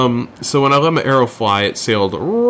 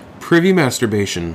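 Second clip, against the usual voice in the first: ordinary talk, nothing marked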